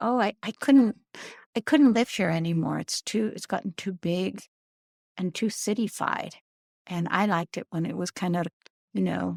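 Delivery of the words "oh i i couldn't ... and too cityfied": plain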